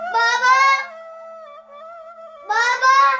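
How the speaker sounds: high shouting voice. Calling out for his father after waking, shouting. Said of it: "ليش هيك عم تصرخ؟".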